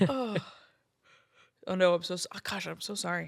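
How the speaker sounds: words stretched by a yawn mid-sentence. Guest talking about weddings with hosts, yawning. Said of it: "I keep yawning".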